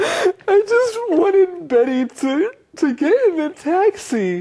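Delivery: put-on sobbing, very high-pitched fake crying voice. In a skit teaching the word 'act', a performer pretends to cry. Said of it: "why are you crying?".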